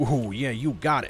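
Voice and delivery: put-on goblin or troll creature voice. Trying to recall whether a goblin or troll said it, doing that voice. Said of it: "Was it a goblin or was it a troll that did that voice?".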